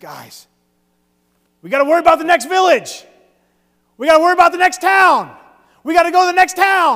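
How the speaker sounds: very high-pitched, very loud, rousing motivational yell. Retelling how a man addressed new graduates, retelling a motivational yell. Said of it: "he began to yell at the people".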